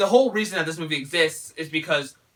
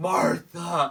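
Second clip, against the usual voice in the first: weak, fading heroic voice. Retelling the fight's ending, imitating Superman saying the name. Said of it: "all you hear is Superman go".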